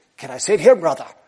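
poor, put-on Irish accent. Speaker retells what a man said to him, in a not very good irish accent. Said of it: "It's not a very good Irish accent".

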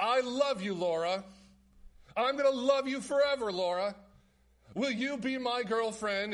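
sweet, innocent-sounding declaring tone. Retelling a TV character's declaration of love: imitating Steve Urkel declaring sweetly. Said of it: "as sweet as can be, as kind and as pure and as innocent as can be".

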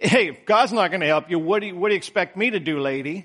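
heavy, sardonic, total sarcasm. Paraphrasing the king's reply to a woman's plea: imitating a sarcastic king. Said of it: "This is sarcasm, total sarcasm".

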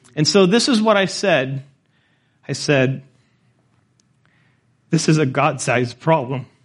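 choked up, emotion catching in the throat. Recounting what they told people in Kenya, getting choked up. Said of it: "The reason I'm getting choked up".

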